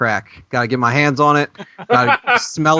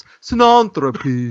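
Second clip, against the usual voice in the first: terrible put-on British accent. Discussing a word, one speaker says it in a put-on british accent. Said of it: "say it when you're with a British accent".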